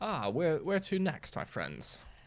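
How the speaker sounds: high, swooping character voice. Voicing Delmain, who asks the players where to next: voicing Delmain. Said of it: "Delmain sees you walking down and says".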